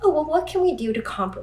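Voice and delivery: high, fast, placating people-pleasing voice.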